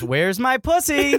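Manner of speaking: bright, cheery tone. Quoting a man's line the way he said it, mock-cheery. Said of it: "he's saying it in a very cheery way".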